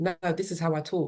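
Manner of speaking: usual speaking voice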